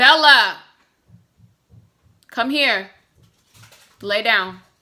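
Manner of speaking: loud, firm calling voice.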